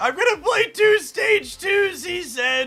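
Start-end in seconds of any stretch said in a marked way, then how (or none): 0.0-2.0 put-on gritted teeth, fake holding back tears. Narrating own move as a story, mock speaking through gritted teeth. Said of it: "through gritted teeth, trying to hold back the tears".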